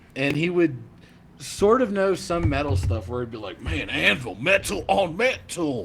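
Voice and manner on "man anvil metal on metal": peculiar, very slow, drawn-out way of talking. Retelling what an acquaintance would say about metal: imitating his distinctive way of talking. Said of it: "he's a very distinctive way of talking".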